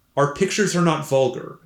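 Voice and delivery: ordinary talk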